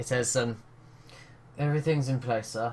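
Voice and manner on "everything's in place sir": hushed whispering voice, quieter. Voicing a guard passing by: whispering. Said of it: "sort of just whispers to you".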